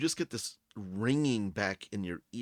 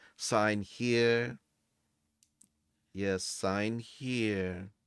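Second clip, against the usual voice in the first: very slow, unhurried clerk voice, "here" drawn out. Voicing a desk clerk who helps guests: slow put-on clerk voice.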